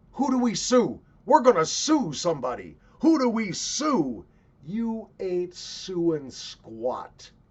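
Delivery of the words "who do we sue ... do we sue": high-pitched, loud outraged voice. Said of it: "reaction of the parents".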